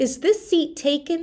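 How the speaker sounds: rising tune ending on taken. Modelling a polite question for learners, with rising question intonation. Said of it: "you're raising your intonation".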